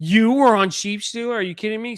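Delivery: exasperated, high-pitched, angry shouting outburst. Retelling what Rhaenyra yelled at Rhaena: imitating Rhaenyra yelling. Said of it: "She's yelling at Rhaena".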